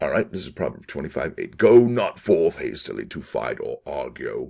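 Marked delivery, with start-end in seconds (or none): 1.6-4.5 put-on old-fashioned, slow, theatrical, stagey Shakespearean voice. Reading a Bible proverb aloud, in a Shakespearean voice. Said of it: "doing it in a uh, Shakespearean voice, and that's exactly what I'm going to do today".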